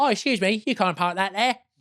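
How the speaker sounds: put-on fussy British bit-part voice. Imitating a man from a meme: Carry On film bit-part voice. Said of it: "sounds like a kind of incidental figure in a Carry On film".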